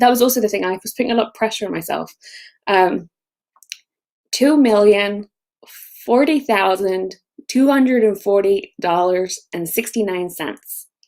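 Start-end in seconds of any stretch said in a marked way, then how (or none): 4.3-10.9 careful, slow attempt at an American accent. Asked to say a money figure, trying it in an american accent. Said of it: "can you say that number in an American accent? Like probably not, but I'll try".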